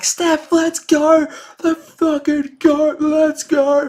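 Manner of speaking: put-on, very high, screaming fan-style cheer. Fan retelling screaming at Steph after a game; retelling a scream. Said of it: "I'm screaming".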